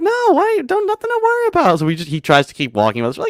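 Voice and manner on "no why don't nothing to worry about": very high, teasing mock voice. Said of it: "He's like".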